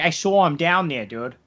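casual, put-on Philadelphia accent. Joking about a woman from philly, imitating her with a philadelphia accent. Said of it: "She's from Philly".

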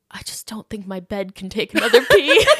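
acted mock-serious, solemn tone. Retelling what a guy said, imitating his very serious tone. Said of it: "in the most serious tone like in the most like like he looked like he was gonna cry".

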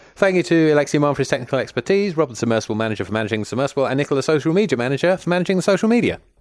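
all in one long unbroken breath, no pauses. Thanking the people who helped with the episode, all in one breath. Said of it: "quite a lot of words in one breath".

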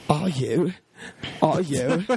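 badly drawn-out, stretched delivery. Watching a show with friends, doing a terrible Antonia Thomas impression. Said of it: "It's a terrible impression of Antonia Thomas".

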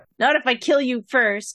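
raging, furious, full-of-rage delivery. Answering a foe in character while still raging: raging. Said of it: "I'm still raging".

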